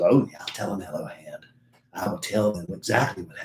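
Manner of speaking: low, soft put-on character voice. Acting out David's reply about listeners wanting tickets, David impression. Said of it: "That's my David impersonation".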